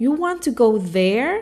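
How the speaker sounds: taken-aback, surprised, faintly judgmental tone. Showing how one question changes meaning when asked this way: surprised question. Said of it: "it's as if the person was surprised".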